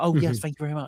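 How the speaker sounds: acted, courteous, very polite tone, high pitch. Retelling a character's reply to a waitress offering coffee: imitating a soft, polite tone. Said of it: "his tone goes really soft and really polite".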